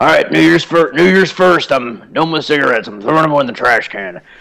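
put-on smoker voice. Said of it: "I love your smoker voice".

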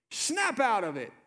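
mock forceful, intense scolding at a very high pitch. Retelling Jesus's words to those who were upset, as a forceful retold rebuke. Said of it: "Jesus would never say it with that intensity".

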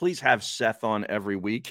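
normal talking voice

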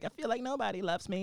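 vulnerable voice, cracking. Retelling a vulnerable TV scene: Katie Holmes voice, cracking. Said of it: "with her Katie P-, Katie, uh, Holmes voice, and it cracks".

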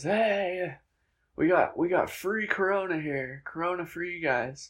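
slow drawn-out yell. Recalling a man on a bar stool yelling at them as they walked in. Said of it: "he started yelling at us".

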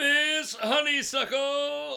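loud, very high-pitched bellowing call. In a police farce scene at City Hall, the mayor summons someone, bellowing. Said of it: "You bellowed".

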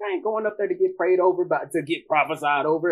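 scornful, derisive tone, laying on mockery. Retelling refusing to go up front to the preacher: retelling own mocking tone. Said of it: "because I'm mark-, mocking him".

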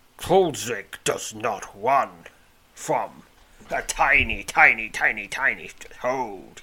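loud, sneering cave goblin voice. The cave goblin Kulzik steps toward you and taunts you, in a sneering Kulzik voice. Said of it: "he sneers".

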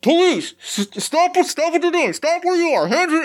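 muffled officer voice. Narrating a scene as armed guards close in, the speaker voices muffled police. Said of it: "you hear like the muffled like".

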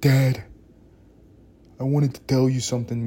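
put-on New York accent. Imagining his daughter at 19 coming up to him, in a put-on New York accent. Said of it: "I'm giving her a New York accent".

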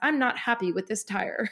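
very correct, proper, polished British delivery. Retelling a driver's radio complaint about his tire: imitating Russell in a proper British way. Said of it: "in such a proper British way".

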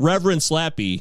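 ordinary talk, nothing marked

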